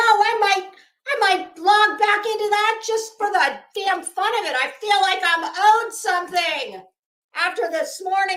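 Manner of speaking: shouting angrily. Ranting about a frustrating morning: yelling. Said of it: "And yes, I am yelling".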